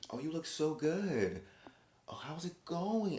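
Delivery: cartoonishly phony, fake-sweet politeness at very high pitch. Imitating Plane trying to be nice: imitating Plane's fake, phony niceness. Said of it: "it sounds, like, fake and phony".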